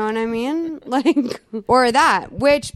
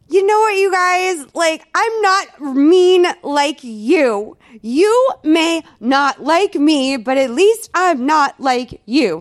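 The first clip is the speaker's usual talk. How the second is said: put-on defiant rant, higher and louder; 5 semitones higher, 5 dB louder than usual. Retelling Nikki Blonsky answering critics on Instagram: imitating Nikki Blonsky ranting. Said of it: "went on to Instagram one night and was like".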